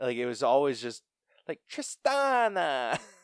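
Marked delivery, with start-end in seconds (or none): 1.7-3.0 exaggerated Italian accent, very high. Imitating how she always said a name: stereotypical italian accent. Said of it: "in the most stereotypical Italian accent that you can".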